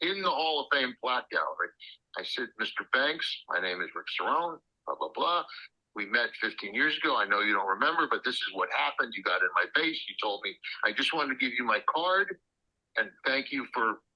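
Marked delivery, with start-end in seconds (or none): none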